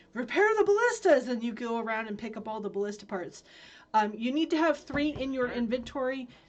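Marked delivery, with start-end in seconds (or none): 0.1-1.2 booming, very loud, high-pitched shrill wizard yell. Explaining a game challenge, quoting the wizard's call; imitating the wizard's yell. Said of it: "the wizard will yell".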